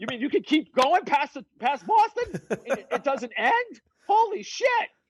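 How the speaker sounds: mock amazement.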